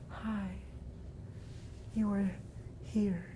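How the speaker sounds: distant, flat, creepy whispered monotone, drawn out. Mocking a horror-movie cliché, the speaker demonstrates a creepy distant monotone. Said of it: "that monotone kind of like distant thing".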